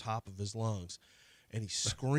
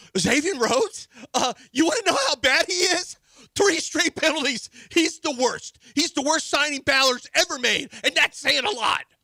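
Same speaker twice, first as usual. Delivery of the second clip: put-on screaming, higher and louder; 13 dB louder than usual. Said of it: "Why are you screaming?".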